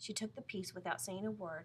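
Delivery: ordinary delivery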